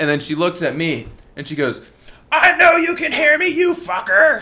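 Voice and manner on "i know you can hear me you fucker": shrill, screeching, hostile screaming outburst. Retelling how a woman screamed at them, the speaker imitates her screaming. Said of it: "she was screaming at the top of her lungs".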